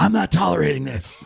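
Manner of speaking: raspy, guttural voice, pushed out. Retelling a mayor's press conference answer, imitating Lori Lightfoot's raspy guttural voice. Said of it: "she had this, like, raspy, guttural voice".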